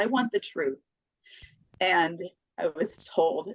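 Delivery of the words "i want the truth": mock really upset, pleading, demanding voice. Retelling a plea made while driving in the car: retelling own upset plea. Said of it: "really upset".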